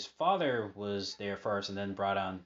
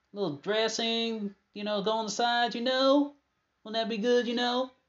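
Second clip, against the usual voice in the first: put-on rambling Southern voice, higher and louder; 7 dB louder than usual. Retelling Bruce Pritchard's bit, doing a Jerry Jarrett impression. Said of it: "that good impression of Jerry Jarrett".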